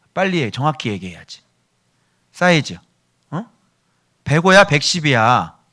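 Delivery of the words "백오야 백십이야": impatient, slow, loud, demanding tone. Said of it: "빨리 얘기해봐".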